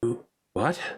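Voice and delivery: baffled, bewildered, caught-off-guard, confused tone. Voicing a character who looks at the player: confused voice. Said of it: "looks at you confusedly and says".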